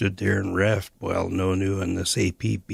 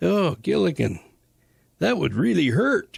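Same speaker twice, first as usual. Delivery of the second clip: put-on easygoing Canadian accent, very high and swooping; 10 semitones higher, 4 dB louder than usual. Retelling what his companion said to Gilligan: Elder Morrison's laid-back Canadian accent. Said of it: "in his laid-back Canadian accent".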